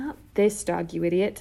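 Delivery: ordinary delivery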